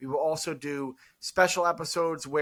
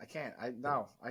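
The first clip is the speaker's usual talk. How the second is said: ordinary delivery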